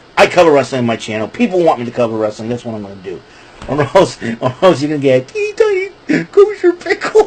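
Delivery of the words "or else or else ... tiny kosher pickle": swooping voice, talking through giggles and laughter. Warning someone after telling them to shut up, laughing while talking. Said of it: "I can't say it without laughing".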